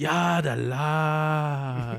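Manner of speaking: put-on Navajo accent. Joking about fry bread being cooked wrong: put-on Navajo accent. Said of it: "the accent, the Navajo accent".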